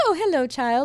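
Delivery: hamming it up, silly, playful voice. Retelling the speaker's mother playing along on Christmas Day; imitating mom being silly. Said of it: "being being silly".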